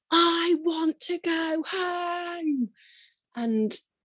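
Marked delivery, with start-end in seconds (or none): 0.1-2.7 very slow, high shout with "home" stretched long. Retelling shouting out during contractions in hospital: imitating own past shout. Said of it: "I just shouted out".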